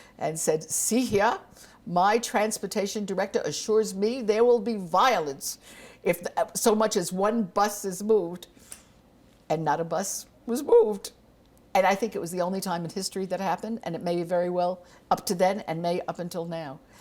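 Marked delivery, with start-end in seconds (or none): 0.7-8.5 put-on lordly, commanding, haughty British accent. Told the buses may not stay on the mall, Bayard replies in his imperious British accent. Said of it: "put on his most imperious British accent".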